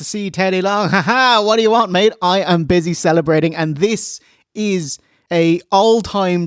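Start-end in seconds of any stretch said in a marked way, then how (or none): 0.9-3.6 put-on jubilant, gloating tone, higher pitch. Retelling a backstage scene, quoting the wrestler: imitating a jubilant gloat. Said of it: "Jubilant J B L is backstage".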